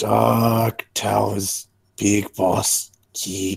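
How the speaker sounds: slow goblin voice, "dark" drawn out. [name] points at the farther question mark; [name]'s goblin voice. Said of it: "I'll try and enunciate with goblin voice".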